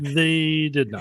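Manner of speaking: mock glum, dejected, let-down tone. Teasing the other speaker by echoing his words, mimicking a disappointed tone. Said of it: "the disappointment in the tone of your voice".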